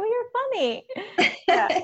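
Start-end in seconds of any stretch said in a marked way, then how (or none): 0.0-0.9 much higher-pitched, amused put-on voice. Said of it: "You're like".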